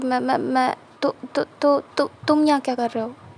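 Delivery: flustered, stammering, stuttering voice. Narrator voices the girlfriend when John confronts her with another boy: flustered stammering. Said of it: "हड़बड़ाते हुए और हकलाते हुए बोलती".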